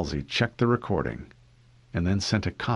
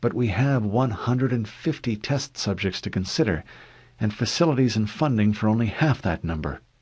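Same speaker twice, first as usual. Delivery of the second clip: ordinary delivery, nothing marked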